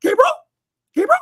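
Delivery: shrill, angry voice rising very high. Impersonating an aunt who would get mad at people, mock-mad Aunt Martha, voice going up. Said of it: "her voice would go up".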